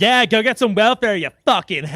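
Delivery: put-on Delaware County accent. Quoting a woman whose accent the speaker objects to, imitating a Delco accent. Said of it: "the fucking accent she used with it".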